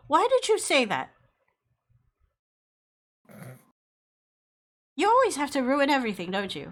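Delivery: shrill, swooping little tantrum. A girl lashes out at a little boy as a player approaches, angry tantrum. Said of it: "throwing a minor tantrum".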